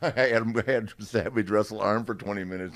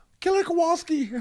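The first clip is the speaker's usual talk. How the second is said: pitched very high and loud; 5 dB louder than usual. Retelling a meeting where a young wrestler answers an older one: Hunter's voice. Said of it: "this is in Hunter's voice".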